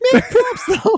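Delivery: put-on cracking voice. Retelling own line that just came out wrong, imitating own cracked voice. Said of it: "My voice, like, broke".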